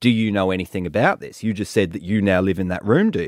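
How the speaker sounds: plain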